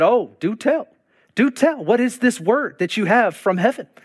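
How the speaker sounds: heavily sarcastic, put-on sarcasm laid on thick. Retelling a reply to a man with a word for the speaker: retelling own sarcastic reply. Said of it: "I'm being sarcastic".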